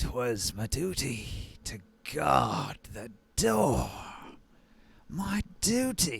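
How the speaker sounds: barely audible, faint, slow half-whisper. Voicing a hidden presence that players can barely hear: faint half-whisper. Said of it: "the sound of the faint whisper".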